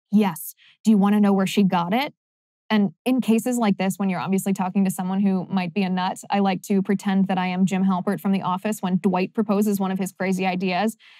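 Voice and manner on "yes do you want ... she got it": play-acted, very conspiratorial, secretive confiding tone. Retelling a stranger's words on a flight: imitating a conspiratorial tone. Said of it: "she gets this very conspiratorial tone".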